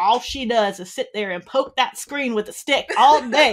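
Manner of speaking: put-on very loud, heavy, thick Alabama accent. Quoting grandpa at the grandparents' house, in a thick Alabama accent. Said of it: "thick Alabama accent".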